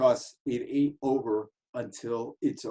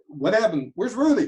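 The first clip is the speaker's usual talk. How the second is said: ordinary talk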